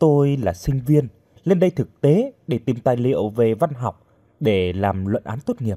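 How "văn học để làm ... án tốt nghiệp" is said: plain reading voice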